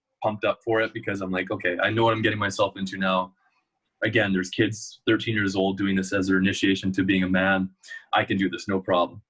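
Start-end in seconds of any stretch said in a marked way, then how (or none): none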